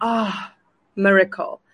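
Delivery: relieved, sighing delivery. Showing how the name is supposed to be said: like a sigh of relief. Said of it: "It's supposed to be like a sigh of relief".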